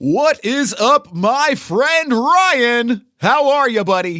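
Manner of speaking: loud carnival pitchman voice. Greeting a friend, the speaker redoes the greeting in his theme park voice. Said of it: "in my theme park voice".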